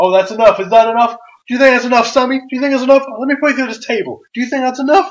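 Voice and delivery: play-acted, very high, loud taunting yell. Retelling a wrestler yelling at an opponent: imitating Kevin Owens yelling. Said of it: "he just yells".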